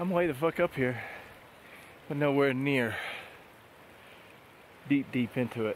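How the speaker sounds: out of breath. Speaker on a trail talking to viewers, out of breath. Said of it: "I'm a little out of breath here".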